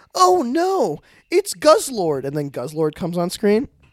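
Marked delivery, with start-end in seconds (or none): 0.2-2.3 very high, very slow, dramatic, swooping anime dub. Describing characters reacting in a movie scene, doing Pokemon voice acting. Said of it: "They do the Pokemon voice acting".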